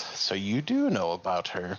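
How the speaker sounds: slow, swooping, laugh-tinged cackling. Retelling a man's reply when asked if the deal was for her, imitating a cackle. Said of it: "he kind of cackles a little bit and goes".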